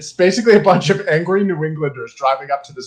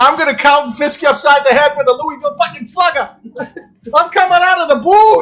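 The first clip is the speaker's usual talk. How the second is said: put-on thick Boston accent, much higher and louder; 11 semitones higher, 6 dB louder than usual. Retelling what a man in a booth said, thick Boston accent. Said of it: "he has the thickest like Boston accent possible".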